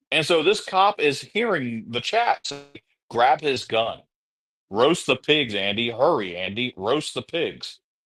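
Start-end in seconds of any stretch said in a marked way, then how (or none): none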